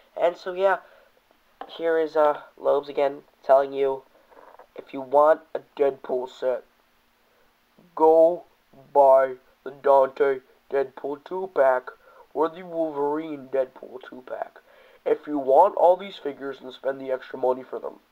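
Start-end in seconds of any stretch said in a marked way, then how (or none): 1.8-18.0 loud, raised, booming character voice. Toy reviewer addressing viewers in a Lobo voice. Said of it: "that's my Lobo voice".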